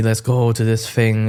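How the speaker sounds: normal talking voice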